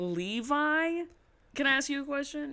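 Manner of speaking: halting, careful sounding out. Retelling own past greeting to the banquet manager: imitating sounding out a name. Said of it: "I sounded like someone who was, like, sounding out his name".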